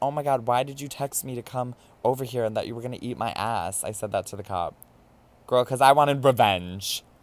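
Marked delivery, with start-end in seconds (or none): none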